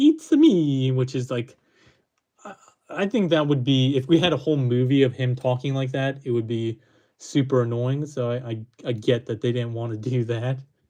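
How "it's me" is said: high-pitched, cartoonish Italian accent. Comparing the voice from the games with a Brooklyn accent, doing the Mario voice. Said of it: "Italian voice that we typically get from from Mario games".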